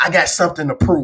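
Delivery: normal talking voice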